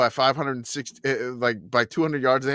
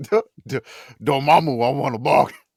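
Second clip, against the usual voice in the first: put-on Cajun-accented voice; 4 dB louder than usual. Asked by another person to say a line, in a Cajun accent. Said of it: "in a Cajun accent?".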